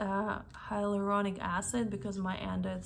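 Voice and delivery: ordinary talk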